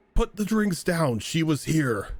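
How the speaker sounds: high-pitched called-out voice, held mild and contained. Voicing Redding calling out from the tavern: Redding's booming voice. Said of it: "Redding's voice sort of booming out".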